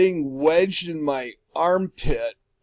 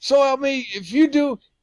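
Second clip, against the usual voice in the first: full, pitched-up yell; 8 semitones higher than usual. Retelling an incident with a man who was yelling, the speaker is retelling someone yelling. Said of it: "he's yelling".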